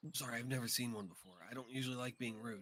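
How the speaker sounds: whispering. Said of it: "so that's why I'm whispering".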